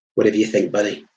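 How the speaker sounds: ordinary delivery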